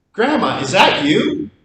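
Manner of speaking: very panicked, frantic, high and loud. Retelling a con man's phone call to grandma: imitating a panicked caller. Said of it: "said in a very panicked voice".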